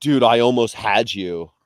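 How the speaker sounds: put-on slow, drawn-out Californian accent. Quoting a movie line to show a California accent: Paul Walker California accent. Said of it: "Paul Walker in the first Fast and Furious movie is exactly the, the American Californian accent".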